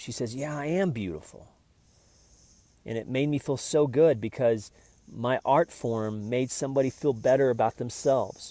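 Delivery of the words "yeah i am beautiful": surprised, taken-aback, caught off guard. Retelling a photographed woman's reply to a compliment: imitating a surprised woman. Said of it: "like, a surprised way".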